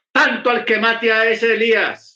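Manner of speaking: furious queenly voice.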